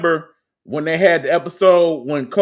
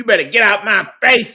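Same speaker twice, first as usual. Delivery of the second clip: put-on older lady voice, higher; 3 semitones higher than usual. Remembering a funny older lady on the show: imitating Miss Jerry. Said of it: "Miss Jerry used to have me rolling".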